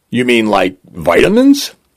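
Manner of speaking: ordinary delivery, nothing marked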